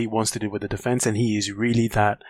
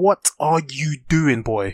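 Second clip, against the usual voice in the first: play-acted, pitched-up, half-shouted mild yell; 5 semitones higher than usual. Retelling a reaction to a player's mistake while watching: imitating own screaming at the TV. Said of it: "I was screaming at the T V like".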